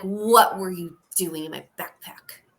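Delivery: mildly in-your-face, pressing, confrontational tone. During a game, a player's character steps up to him, getting in his face. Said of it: "get in his face a little".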